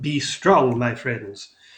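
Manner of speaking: booming, loud, rousing call. Voicing a hero yelling to friends across the room: booming voice. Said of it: "in this booming voice from Rock".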